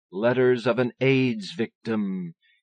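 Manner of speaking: spooky, eerie voice. A narrator reads a character's line, in a spooky voice. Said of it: "He says this in a spooky voice".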